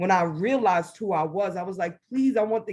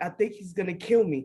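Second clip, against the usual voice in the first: acted-out tearful, crying, frightened voice; 3 dB quieter than usual. Retelling seeing a man with a shotgun come off his porch: imitating own crying. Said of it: "And I'm crying".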